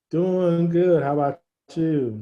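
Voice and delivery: very slow, drawn-out words. Answering a greeting at the start of a video call, very slow. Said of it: "Why did you say that so slow?".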